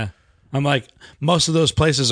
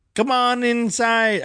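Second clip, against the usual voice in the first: put-on Jamaican accent, higher; 10 semitones higher than usual. Imagining a psychic greeting visitors at the door: Miss Cleo accent. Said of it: "Miss Cleo's accent".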